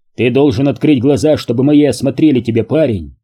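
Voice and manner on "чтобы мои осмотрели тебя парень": plain reading voice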